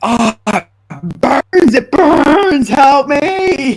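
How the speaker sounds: very slow, loud, drawn-out howl of agony. Acting out their character running to the door, screaming in pain.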